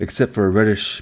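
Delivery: plain reading voice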